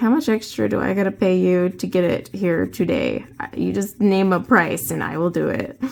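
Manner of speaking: usual speaking voice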